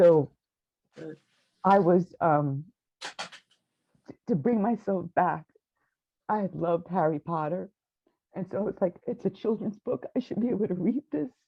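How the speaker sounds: voice full of emotion. Speaker describes relearning to read, getting emotional. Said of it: "I'm sorry if I get emotional".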